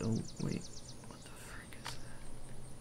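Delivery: quiet whisper. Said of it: "That I'm whispering".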